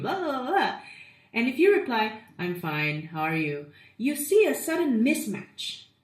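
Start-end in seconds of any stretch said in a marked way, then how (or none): 2.4-3.7 flat, dull, boring tone, lower pitch. Demonstrating a mismatched reply to a vibrant person's greeting, flat and boring. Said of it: "you're so boring".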